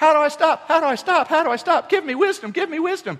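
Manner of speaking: shrill, very high scream at full volume. Retelling rolling down a steep hill, the speaker reenacts screaming at their sister. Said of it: "I'm screaming at my sister".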